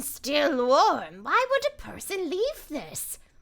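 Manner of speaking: cartoony bird character voice, swooping. Speaker voices a bird character finding something left behind, in a cartoony bird voice. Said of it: "this one's gonna be a little bit cartoony".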